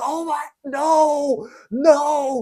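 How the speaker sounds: very high screaming, each no stretched long. Retelling losing at chess: imitating own past screaming.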